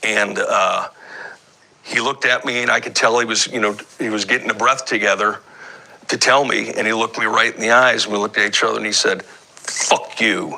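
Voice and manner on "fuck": heavy stress on fuck, F sharply punched. Retelling a shot man's answer to a questioning cop: stress on fuck. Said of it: "with the emphasis on that F".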